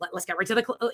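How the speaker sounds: snippy, bitchy tone, cut off mid-word. Retelling how the line was an aside: imitating Ryan Reynolds speaking bitchily. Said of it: "Ryan was saying bitchily to the kid".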